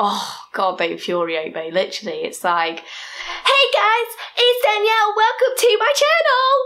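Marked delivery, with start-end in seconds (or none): 2.8-6.7 put-on very high, shrill, loud, screechy American girl vlogger voice. Speaker mocks voices that infuriate them, doing a screechy, loud American female voice. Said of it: "really screechy, loud, female American voices".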